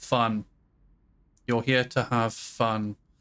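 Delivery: utterly flat, low, slow, droning deadpan monotone. Retelling a guy pointing at what he wrote on a whiteboard, mimicking a deadpan monotone. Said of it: "in the most fucking monotone voice".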